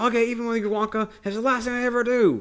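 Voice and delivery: loud, very high yell. Retelling a film scene, imitating Sam Beauregard yelling in bass. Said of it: "he's yelling. He's yelling in this, the same, uh, bass".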